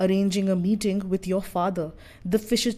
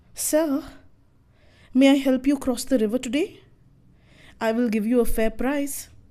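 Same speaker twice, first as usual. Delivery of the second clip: put-on cheerfulness, pitched up and projected; 5 semitones higher, 3 dB louder than usual. Narrator reads the fisher maiden calling out to Devavrata, in a falsely cheery voice. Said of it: "She calls in a falsely cheery voice".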